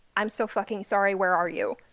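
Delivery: quiet, hushed voice while sprinting. Ren sprints up the street and speaks into his walkie-talkie, quietly while sprinting. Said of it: "try to say quietly while fucking sprinting".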